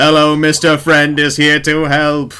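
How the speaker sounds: flat monotone robot bellow at full volume. Voicing a charging robot golem: robot screaming at top of lungs. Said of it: "Screaming at the top of its robot lungs".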